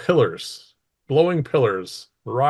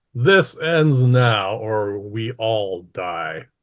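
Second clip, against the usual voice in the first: firm, commanding, authoritative voice. Narrator voices the Lich stepping through holding a necklace, in a commanding voice. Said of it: "says in a commanding voice".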